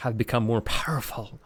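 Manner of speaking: hushed, softly whispered. Reading a story aloud, a character speaks to a nearby skull, whispering. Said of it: "he whispers to a nearby skull".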